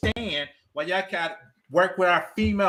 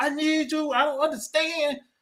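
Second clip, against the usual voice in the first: play-acted frustrated, angry, high-pitched shouting; 7 semitones higher than usual. Retelling a story from work, the speaker acts out yelling at them. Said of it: "I just start yelling at them".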